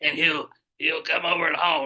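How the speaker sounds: laid-on sleazy local huckster voice. Telling a story about Big Willie, the speaker does the Big Willie voice. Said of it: "That's how he talks".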